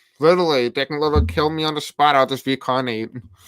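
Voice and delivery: ordinary talk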